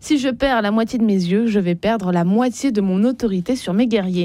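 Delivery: ordinary delivery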